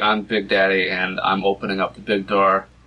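normal talking voice

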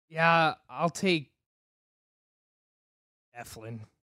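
grudging, reluctant, unenthusiastic, unhappy delivery. Choosing between two pitchers neither of which they like, reluctant and unhappy. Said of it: "But you hear it in my voice".

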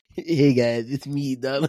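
put-on bratty cartoon kid voice. Introducing himself as Donald to the others: sounds like Eric Cartman. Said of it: "you sound like Eric Cartman".

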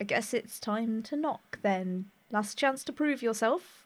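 slow, hushed half-whisper. Half-whispering into a captive's ear before knocking on a door: half-whispering in character. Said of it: "lean down and just whisper in Cyril's ear".

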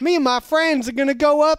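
very high, very loud put-on Southern US accent. Suggesting what an exotic american accent sounds like: put-on southern american accent. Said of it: "an exotic American accent would be like a Southern accent".

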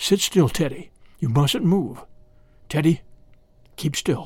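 whispering. Facing a threatening snake, a father tells his son to keep still, whispering. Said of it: "all his father could do was whisper".

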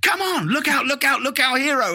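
high cartoon rabbit voice. Showing how he sounds for kids who ask if he's Peter Rabbit, Peter Rabbit voice. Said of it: "he's got a slightly higher voice than me".

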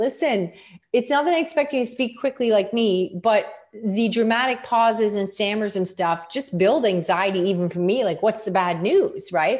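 ordinary talk

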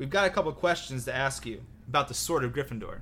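ordinary delivery

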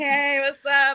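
put-on pained voice. Retelling greeting someone while limping, imitating own pained voice. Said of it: "like I'm in pain".

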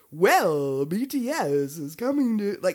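loud, drawn-out, corny, fake radio-host announcer voice. Mocking entertainment personalities who sounded corny, in a cheesy fake announcer voice. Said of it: "the most like cheesy, fake voices like".

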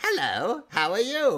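posh, aristocratic, slow, lifted voice. Showing the aristocratic voice built from [name]'s voice: aristocratic voice. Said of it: "when it said aristocratic".

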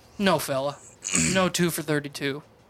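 plain, unembellished delivery. Retelling refusing a clerk's offer, imitating his own past words. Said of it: "that's exactly how I said it".

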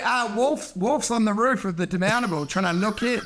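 ordinary delivery

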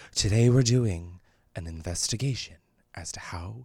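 soft, hushed, half-whispered narration. Doing a conspiracy-video intro on request: half-whispery Shane Dawson impression. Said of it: "It's very whispery".

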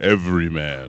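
low, bass-heavy announcer voice. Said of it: "you have to say it with a little bit more bass".

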